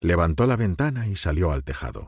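plain

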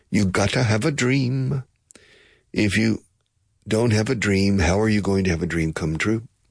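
put-on Polynesian-accented speech. Quote what she says about having a dream, in a put-on Polynesian accent. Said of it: "She says it with a Polynesian accent".

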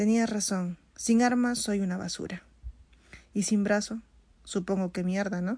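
plain

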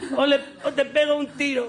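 high, slow, threatening mock robber voice.

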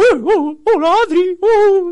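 very high, slow, drawn-out, loud storybook cartoon bear voice. Recalling a series she watched as a girl, doing a Winnie the Pooh voice. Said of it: "tiene voz de De hombre, pero es como".

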